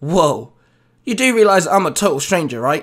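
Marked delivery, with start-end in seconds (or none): none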